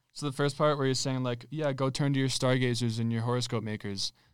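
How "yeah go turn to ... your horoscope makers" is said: usual speaking voice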